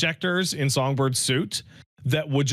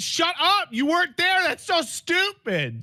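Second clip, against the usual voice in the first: acted-out, very high, swooping yelled outburst. Retelling yelling out at a game cutscene: imitating own past yell. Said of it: "I just yelled out".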